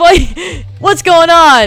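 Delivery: high, loud, raging shout.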